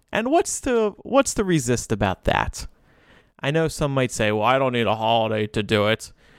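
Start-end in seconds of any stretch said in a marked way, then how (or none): 4.3-6.1 put-on grumpy old man voice, lower pitch. Voicing someone who needs no holiday to show love: grumpy old man voice. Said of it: "What was that impression of?".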